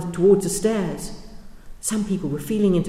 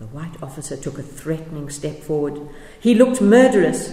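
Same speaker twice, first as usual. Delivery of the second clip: plain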